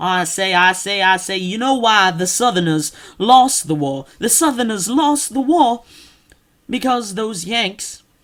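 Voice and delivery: blustering Southern cartoon rooster voice. Mocking people who fake Southern accents, doing a Foghorn Leghorn voice. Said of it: "talk like Foghorn Leghorn".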